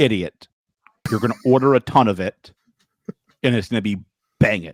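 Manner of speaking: dead serious voice. Retelling their rep's reply, the speaker imitates his serious voice. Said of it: "my rep turned on his serious voice".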